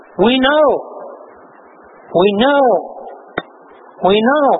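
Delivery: ordinary talk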